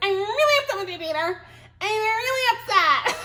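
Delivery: tiny mouse-like voice. Quoting a frustrated woman, in her little mousy voice. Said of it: "her little mousy voice".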